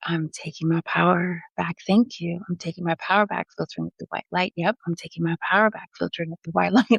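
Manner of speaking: calm, steady, repeated, mantra-like delivery. Retelling own words repeated to a possessed man: imitating own calm voice. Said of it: "my voice got real calm".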